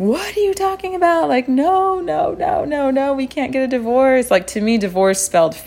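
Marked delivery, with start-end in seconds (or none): 0.0-4.3 very high, bawling, sobbing protest. Speaker retells her reply to her husband's remark, imitating herself bawling. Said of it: "immediately I started bawling".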